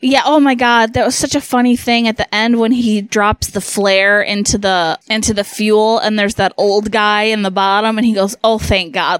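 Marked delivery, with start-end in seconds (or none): 8.4-9.2 acted overjoyed, relieved voice. Recounting an old guy's reaction at the end, imitating relieved joy. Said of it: "Like he's just so happy to finally die".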